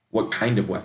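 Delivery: ordinary talk, nothing marked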